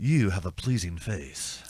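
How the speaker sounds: flirty voice. A player, in character, flirts with a woman to see if she'll bend the rules: flirtatious. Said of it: "I'm flirting with her".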